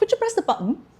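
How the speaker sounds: put-on Leeds accent with glottal stops. Retelling what people in Leeds always said: imitating a Leeds glottal-stop accent. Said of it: "hearing that accent for a hundred times".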